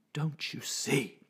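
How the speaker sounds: intense, urgent, fierce hushed whisper. Reading a man's line to the narrator in a hallway, fierce whisper. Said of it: "He whispered fiercely".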